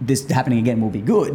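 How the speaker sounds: ordinary delivery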